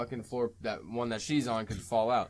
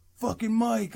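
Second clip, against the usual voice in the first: very high-pitched, loud yelled outburst; 11 semitones higher, 5 dB louder than usual. Retelling a movie scene where a character yells: imitating someone yelling. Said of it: "yells at the old".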